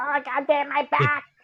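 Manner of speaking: very high, slow, squeaky chipmunk voice. Joking about another speaker falling in a costume: chipmunk voice. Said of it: "the chipmunk voice comes out".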